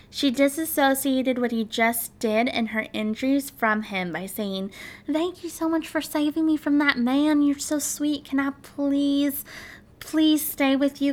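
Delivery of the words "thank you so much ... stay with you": put-on sweetest little Texan accent. Retelling a woman thanking the man for saving her, in a put-on sweet texan accent. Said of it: "in the sweetest little Texan accent she could".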